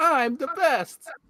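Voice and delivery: very high-pitched, tiny little character voice. Asking which Toad voice is better, doing the old Mario Kart Toad voice. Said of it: "Toad voice in Mario Kart where he goes".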